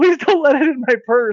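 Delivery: mock very high, frantic, panicked voice. Retelling a woman's reaction to a snake at a restaurant: imitating a woman freaking out. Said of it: "freaking out pretty freaking hard".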